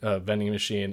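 ordinary talk, nothing marked

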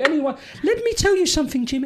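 put-on Welsh accent, pitched very high. Retelling how his Welsh boss at Wigan used to talk, imitating the Welsh gaffer's accent. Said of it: "And this is how he used to talk".

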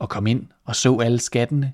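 plain

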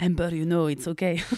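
imitated man's English accent. Retelling what the wealthy host said to her, imitating the man's english accent. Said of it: "Je fais cet accent, c'est ridicule".

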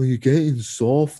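attempted Brummie (Birmingham) accent. Imagining one wrestler confronting another: Tyler Bate Brummie accent. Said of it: "That's me trying to do a Brummie accent".

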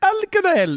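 mock Scouse accent. Showing how people sound doing a Liverpudlian accent: put-on Liverpudlian accent. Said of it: "if you're doing a Liverpudlian accent".

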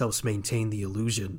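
put-on threatening character voice. Retelling a scene, quoting the character's line in a menacing Mysterio voice. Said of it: "says in a menacing voice".

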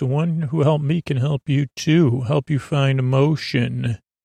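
ordinary talk

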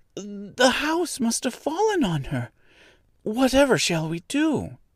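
very high-pitched cry full of dismay. Dorothy sees two feet sticking out under the house: in dismay. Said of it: "clasping her hands together in dismay".

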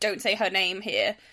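words hissed out. Retelling a man answering in an argument: imitating a man hissing. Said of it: "one of those hiss things where he's like".

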